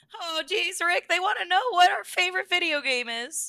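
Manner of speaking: very high-pitched put-on cartoon voice. Reading a viewer question aloud, in a Morty voice. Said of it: "I'm gonna read it in his voice".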